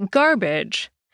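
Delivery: garbage, stress on gar, second vowel swallowed. Explaining english word stress with garbage, stress on gar, reduced second syllable. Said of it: "emphasis on the gar and hardly saying the uh sound in badge at all".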